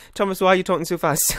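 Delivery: plain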